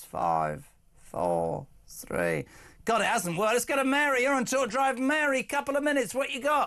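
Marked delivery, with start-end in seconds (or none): 0.0-2.4 deep, very low voice. Mocking a politician switching on the Christmas lights: imitating Keir Starmer's countdown. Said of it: "as he did when he turned on the Christmas lights".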